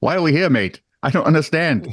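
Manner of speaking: terrible, bad put-on Australian accent. Voicing kangaroos looking up at whoever opened the thing, in a bad Australian accent. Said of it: "That may be the worst accent you've ever done".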